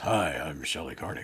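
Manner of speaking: put-on congested, sick-sounding head-cold voice. Joking that the other speaker will catch a cold: imitating Shelley with a cold. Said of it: "then she'll start talking like this".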